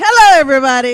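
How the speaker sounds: very loud, booming shout. Greeting everyone after being introduced: loud greeting. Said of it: "being loud".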